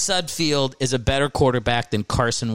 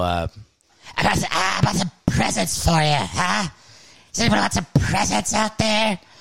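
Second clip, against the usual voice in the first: high-pitched demonic voice; 6 semitones higher than usual. Retelling how a performer talked between songs at a Christmas show, talking like a demon. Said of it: "he was talking like a demon".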